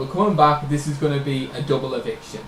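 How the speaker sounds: ordinary delivery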